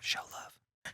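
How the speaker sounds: soft, hushed whisper. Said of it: "Why are we whispering?".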